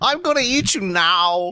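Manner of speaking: put-on alien voice. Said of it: "I want [name] to be the alien".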